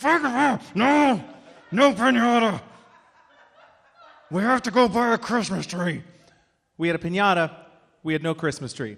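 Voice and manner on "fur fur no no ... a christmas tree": slow, pitched-up words forced through clenched teeth. Retelling his dad refusing the kids' piñata, imitating dad talking through teeth. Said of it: "swearing through his teeth".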